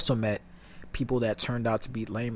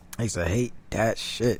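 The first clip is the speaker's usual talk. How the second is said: normal talking voice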